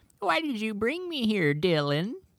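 put-on very high, befuddled, confused old lady voice. Asked to hear the voice of an old lady talking to a ditch: confused old lady voice. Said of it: "Can we hear that voice?".

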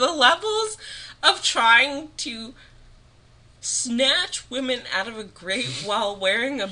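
near tears, very high, shrill and loud. Mid-rant in a conversation, tearing up. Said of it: "I'm literally tearing up".

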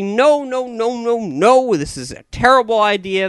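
put-on high, whiny, drawn-out complaining scream. Mocking people who object to the idea, mock screaming and whining. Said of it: "They scream and shout".

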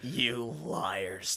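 put-on malicious tone. Retelling a character's accusation to a group of children, mock-malicious tone. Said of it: "with such malice in his voice".

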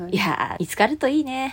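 high, playful, put-on teasing tone. Retelling what someone said about a lost phone, mimicking a teasing tone. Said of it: "割といじってきたわけだから".

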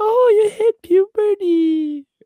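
very high, slow, wailing mock crying voice. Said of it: "your mom would be like".

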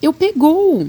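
hurried, very high-pitched, quick shout. Having caught something in his net, the giant calls to Sofia: shouted quickly. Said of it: "gritou depressa".

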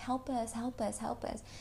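put-on soft ghostly child voice. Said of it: "they kept saying".

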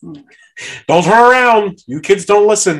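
play-acted high, loud yelling. Retelling what a haunted house actor said at a mock funeral: imitating someone yelling. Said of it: "you had the one lady yelling".

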